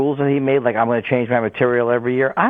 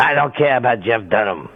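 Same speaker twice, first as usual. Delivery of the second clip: poorly done put-on bitter old comic voice; 3 semitones lower than usual. Doing a bad impression of an old bitter comic. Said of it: "a bad impression of an old bitter comic".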